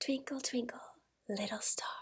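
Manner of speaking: hushed, very quiet, secretive, sneaky whisper. Showing how to share something secretive or sneaky: whisper. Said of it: "I might use a whisper".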